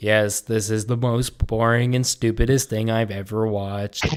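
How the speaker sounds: play-acted very slow, dull, bored monologue delivery. Mocking movie reviewers who talk in front of the video: imitating a boring monologue voice. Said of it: "that monologue, like, boring voice".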